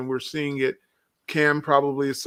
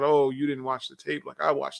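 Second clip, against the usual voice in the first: put-on arrogant coach voice. Imitating the coach answering a reporter's question: imitating Tom Thibodeau's arrogance. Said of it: "the arrogance that comes out".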